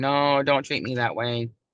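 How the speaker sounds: meek, timid delivery. Showing how not to stand up for yourself: meekly. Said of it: "don't go up to somebody all meekly going".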